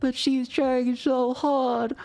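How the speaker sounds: put-on crying. Retelling how a character cried over a dying grandmother: imitating someone crying. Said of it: "he's there crying like".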